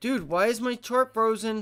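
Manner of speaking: loud, high-pitched shouting. Speaker watching stock charts, talking into a mic, yelling. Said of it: "Sorry to yell in the mic".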